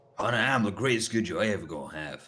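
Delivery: badly botched put-on American accent. Quoting The Incredibles as an English person, in a bad American accent. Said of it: "an English person doing an American accent".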